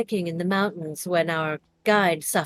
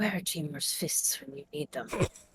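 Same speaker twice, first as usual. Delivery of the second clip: muttered aside, much quieter; 11 dB quieter than usual. Narrator voicing Cheng Mei among travelers, muttering under her breath. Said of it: "sort of mutters under her breath".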